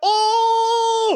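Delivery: shocked, very high, slow drawn-out shout.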